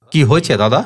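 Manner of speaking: ordinary delivery, nothing marked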